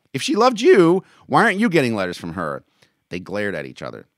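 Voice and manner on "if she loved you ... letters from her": shrill, very loud, swooping snapped line. A man snapping back at the other man during an argument. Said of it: "Marks snapped".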